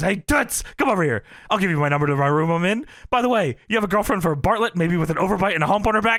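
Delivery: super quick, aggressive, pushy rapid-fire patter. Retelling what a commentator said to a woman in the ring: imitating Heenan talking super quick and aggressively. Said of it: "Heenan starts talking super quick and aggressively".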